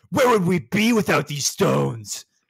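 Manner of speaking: loud, rough, gruff voice. Gamer quotes his Monster Hunter character sharpening a weapon: gruff voice. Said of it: "my guy is like gruff".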